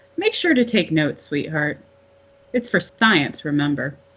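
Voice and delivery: plain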